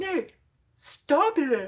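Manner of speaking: very high, loud mock yell, not shrill. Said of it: "like, yelling at me".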